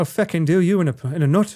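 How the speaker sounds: put-on Irish-accented voice. Challenged to show off his accents, the speaker answers in an Irish accent. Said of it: "You want your Irish accent?".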